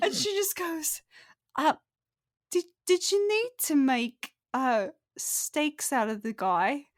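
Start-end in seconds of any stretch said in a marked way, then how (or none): 1.6-6.8 small, timid, hesitant little voice. Narrating a game scene, voicing a small character peeking out to ask something, timidly. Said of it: "you hear a little voice kind of peek out".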